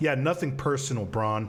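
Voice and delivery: heavy, thick, dripping sarcasm. Replying in character to a teammate who calls it nothing personal: dripping with sarcasm. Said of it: "I say dripping with sarcasm".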